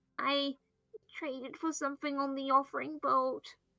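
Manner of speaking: tiny, hushed, shrunken, very quiet voice. Playing Tuco, looking down while answering what happened, in a small voice. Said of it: "be a bit small in voice".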